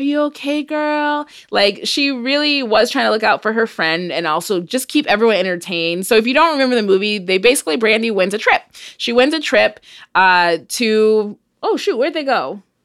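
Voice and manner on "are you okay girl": put-on soft-spoken, high little baby voice. Retelling how a character talked in a film: imitating a soft baby voice. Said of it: "She had her little baby voice and was like".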